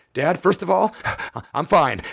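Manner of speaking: play-acted spooked, freaked-out voice, slowed down. Retelling a late-night call from a daughter: imitating a freaked-out voice. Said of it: "And her voice is freaking".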